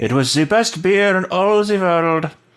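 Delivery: put-on very high-pitched, butchered German accent. Quoting a grandfather about his secret recipe, in a bad german accent. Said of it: "I know I'm completely butchering a German accent".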